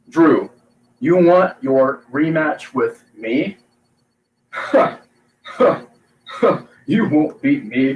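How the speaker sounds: slow, clipped, full stop after every word. Imagining a wrestler as champion calling out Drew: imitating Keith Lee's clipped speech. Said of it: "can you imagine him as champion coming out and being like".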